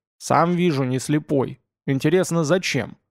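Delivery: plain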